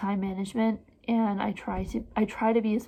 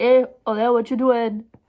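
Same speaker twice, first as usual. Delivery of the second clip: put-on Trinidadian accent; 2 semitones higher, 9 dB louder than usual. Describing how the speaker's dad sounds, old Trinidadian man accent. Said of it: "My dad sounds like an old Trinidadian man that's like".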